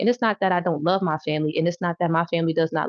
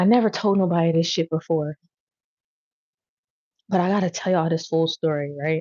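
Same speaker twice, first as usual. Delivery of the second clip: tearful, crying while talking. Starting to tell a story never told anyone before, crying while talking. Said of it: "I can't stop crying".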